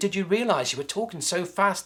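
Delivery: ordinary delivery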